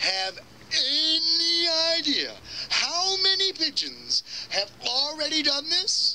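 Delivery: whining, pleading tone.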